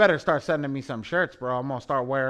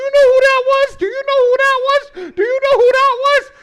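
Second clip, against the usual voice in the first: put-on shrill, high, loud, eager, excited little-kid voice; 13 dB louder than usual. Retelling how Dre reacted at an event: imitating an excited schoolboy. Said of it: "Dre like a little schoolboy go".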